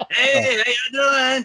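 mock drunk, idiotic-sounding voice. Acting out a coworker walking in the door: imitating a drunk greeting. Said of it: "you don't sound like a drunk fucking idiot when he walks in the door, like you just did".

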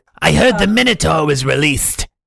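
lizard man character voice. Speaker resumes a character after another speaker interrupts, lizard man voice. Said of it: "let you finish the lizard man voice".

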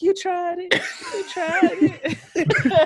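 very high voice cracking mid-line, squeaky. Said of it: "Very [name] and shit".

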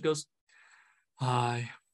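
gloomy, mopey, utterly downcast delivery. Retelling a spectral figure's greeting, saying hi in an Eeyore voice. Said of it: "in the most Eeyore voice possible".

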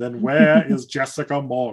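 clumsy fake villain voice. Retelling a villain's threat from a show: horrible Alan Rickman impression. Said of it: "my horrible Alan Rickman impression".

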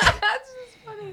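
very high voice, crying with laughter through tears. Reacting to a funny story from another speaker, laughing to tears. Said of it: "why are you crying?".

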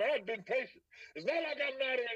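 put-on rough, loud talk. Retelling losing patience with people in South Memphis, imitating own rough, loud talk. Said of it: "I'm talking rough at this point".

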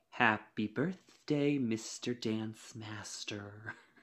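terrible bombshell voice, dragged out very slow and badly. Joking about a dancer's kiss to a judge: Marilyn Monroe impression.

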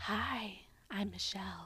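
hushed, very soft, barely voiced whisper. Imitating how Michelle talks: imitating Michelle's whisper. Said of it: "that whisper".

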